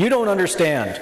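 sudden, high, acted-out blurted interjection. Recounting a presentation where the tax assessor in the front row interrupts, retelling a yell. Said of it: "she just yells out".

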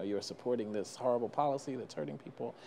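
ordinary talk, nothing marked

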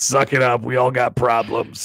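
put-on clown voice with a thick accent. Continuing an imagined clown scene: Bozo the Clown with thick accent. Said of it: "he definitely had a thick accent".

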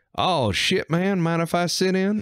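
put-on old Texas farmer voice, pitched way up. Retelling a D&D game in a root cellar, a farmer joins: imitating an old Texas farmer. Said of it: "an old Texas farmer".

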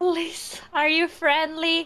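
high-pitched, loud calling-out voice.

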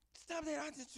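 yelling, high, sudden and sharp.

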